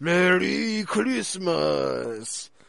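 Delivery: creaky, rough, swooping demonic robot voice. Describing a cartoon episode's villain line: imitating a robotic, demonic voice. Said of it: "this robotic, demonic, like".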